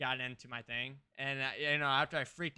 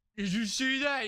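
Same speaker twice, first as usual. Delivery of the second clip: mock exaggerated excitement, higher and louder; 9 semitones higher, 5 dB louder than usual. Mocking the fake reaction streamers put on: mocking fake streamer excitement. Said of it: "I don't have to put on this".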